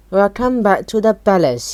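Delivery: ordinary delivery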